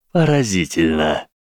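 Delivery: snakelike hiss in a villain voice. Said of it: "прошипел Волдеморт".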